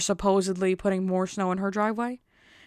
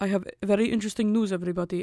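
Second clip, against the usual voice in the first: put-on Russian-accented voice. Imitating the boss announcing news at work: imitating boss's Russian accent. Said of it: "he's, like, Russian, so he talks like this".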